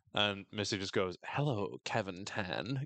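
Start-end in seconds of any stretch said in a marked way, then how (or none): 1.2-2.8 play-acted eerie, creepy murmur under the breath. Recapping a show, speaker quotes a character watching a man on camera: mock-creepy, to herself. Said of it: "creepily to herself".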